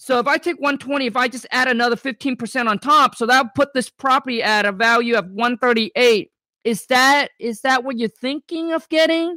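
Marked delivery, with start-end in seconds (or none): 6.6-9.4 hesitant, unsure, questioning tone. Demonstrating how to quote a property's value to someone, in an unsure questioning tone. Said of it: "You see how I kind of changed my voice?".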